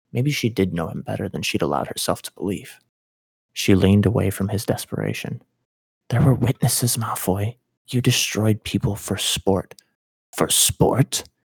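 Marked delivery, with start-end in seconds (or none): 10.3-11.2 scornful, derisive scoff. Malfoy answers Granger's accusation, scoffing. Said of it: "He scoffed".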